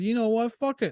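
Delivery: high, defiant, blurted-out outburst. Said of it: "So he just said".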